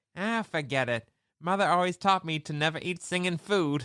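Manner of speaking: high-pitched puppet voice. Retelling a film scene, quoting the rat refusing food: Rizzo voice. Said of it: "He's like".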